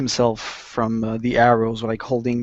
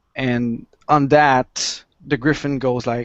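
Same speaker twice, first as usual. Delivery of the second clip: normal talking voice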